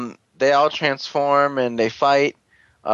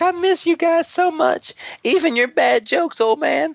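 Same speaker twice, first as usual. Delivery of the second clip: put-on very high-pitched old grandmother voice. Retelling a story, the speaker voices Daigo meeting his friends: Daigo in a grandmother voice. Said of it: "why does he sound like a grandmother?".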